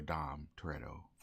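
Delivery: ordinary talk, nothing marked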